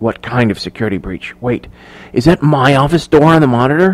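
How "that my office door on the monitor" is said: ordinary delivery, nothing marked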